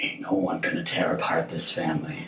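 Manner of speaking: soft, hushed, resolved murmur. Narrating a scene, the storyteller gives a woman's line to the couple in a low, hushed voice. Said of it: "in a low, hushed voice, she says".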